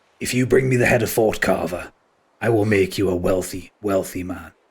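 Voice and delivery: whispering conspiratorially. A character pulls the listener close and speaks into their ear: whispering conspiratorially. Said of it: "says and whispers in Treble's ear".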